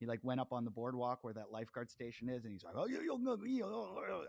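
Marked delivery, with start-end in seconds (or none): 2.8-4.2 put-on Japanese accent, very high and drawn out. Retelling what a stung man said to the lifeguards, in a put-on japanese accent. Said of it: "that's my Japanese accent".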